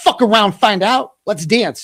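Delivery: mocking, swaggering tough-guy bravado. Mocking an accuser who acts tough: mocking a tough badass. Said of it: "we got a badass".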